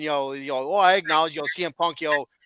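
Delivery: put-on sarcastic, mocking tone. Retelling someone mocking cm punk during a segment, imitating a mocking, sarcastic tone. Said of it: "in a mocking or sarcastic tone".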